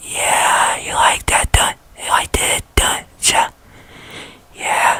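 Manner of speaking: soft, whispered ASMR-style tone. Video host demonstrating the voice from their last review video, ASMR-style tone. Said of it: "in an A S M R kind of tone, kind of like this".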